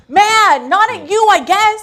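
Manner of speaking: acted screaming in anger. Acting out a parent reacting to a spilled drink: screaming in anger. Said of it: "I'm, like, screaming".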